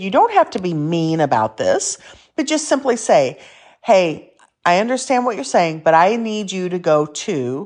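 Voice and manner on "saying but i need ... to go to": ordinary talk, nothing marked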